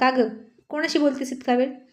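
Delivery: ordinary delivery, nothing marked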